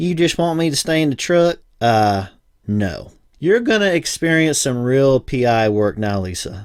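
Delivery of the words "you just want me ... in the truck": put-on Alabama accent, pitched up. Retelling what Lisa asked on seeing the house: Alabama accent imitating Lisa. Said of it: "in her Alabama accent asked".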